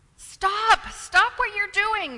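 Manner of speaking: very loud, shrill, high-pitched shout. A speaker demonstrates the shout that kids sometimes need, shouting. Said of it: "don't we need that shout?".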